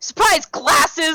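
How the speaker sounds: shouted in a character voice. Sneaking up behind a kobold to grapple it: yelling in character. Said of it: "and I'm gonna yell".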